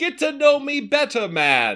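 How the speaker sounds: put-on giant voice with swooping Jamaican accent. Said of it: "Are you Jamaican?".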